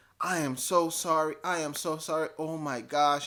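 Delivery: mock-hysterical, frantic put-on voice. Retelling a woman apologizing after getting vomit on him, imitating a hysterical apology. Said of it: "She's kind of hysterical".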